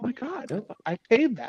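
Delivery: put-on acted high young woman voice.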